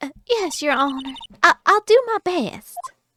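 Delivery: put-on sweet Southern accent with drawl. Voicing a young witness answering the judge: sweet Southern accent. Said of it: "that, like, sweet Southern accent".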